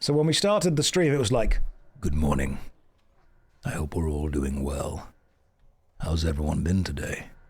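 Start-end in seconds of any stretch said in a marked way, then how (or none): 2.0-7.2 deep, low, fresh-out-of-bed morning voice. Streamer recalling the start of a stream right after waking: deep morning voice. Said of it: "my voice is always really deep".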